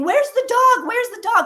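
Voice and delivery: scream, pitched very high. Retelling a seance when the camera suddenly yanked backwards: retelling a scream. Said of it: "I'm screaming".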